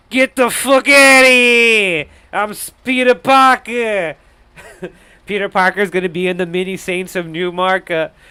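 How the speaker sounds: put-on loud, heavy New York accent, "here" drawn out. Pitching a down-and-out Spider-Man movie, voicing the hero: Spider-Man in hardcore New York accent. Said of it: "talks in his hardcore like uh like New York accent".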